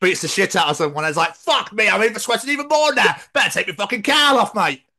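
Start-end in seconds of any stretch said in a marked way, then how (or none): 1.4-4.7 put-on pitched-up London Cockney geezer accent. Joking about a sweltering costume: Batman as a Cockney geezer. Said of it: "I never thought to hear Batman go".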